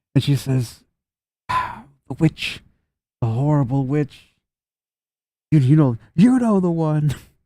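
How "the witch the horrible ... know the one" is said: strained and stressed delivery, pitched up. Narrator voices a woman rubbing her forehead as she names the witch, stressed. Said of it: "obviously stressed at this conversation".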